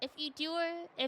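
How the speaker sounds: plain reading voice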